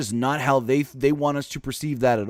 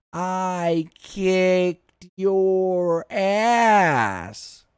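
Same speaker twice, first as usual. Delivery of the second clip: high, very slow slow-motion voice, "ass" drawn out; 6 semitones higher than usual. Imitating Charlotte Flair delivering a line badly: slow-mo Charlotte Flair voice. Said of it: "She said robotic, not slow-mo".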